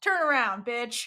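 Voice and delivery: put-on very confident voice. Retelling a scene where someone interrupts an attacker: imitating a very confident voice. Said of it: "a very confident voice says".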